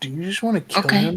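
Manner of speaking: half-whisper, close and intimate-sounding. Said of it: "can I whisper in her ear?".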